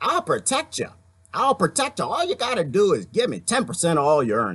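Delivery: swooping, swaggering put-on country-western Italian mobster voice. Retelling a story, the speaker changes voice for a character, Vinny the Nose voice. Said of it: "That was like country western Italian".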